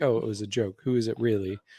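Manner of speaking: plain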